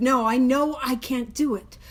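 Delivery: ordinary delivery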